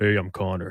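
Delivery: low, deep, seductive, confident voice. Prompted to introduce oneself in a seductive, deep, confident tone: deep, seductive voice. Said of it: "Is that deep and seductive?".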